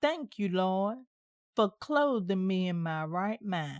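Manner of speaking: put-on deep Southern accent. Quoting how she gave thanks in prayer, in a deep southern dialect. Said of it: "in her deep Southern dialect".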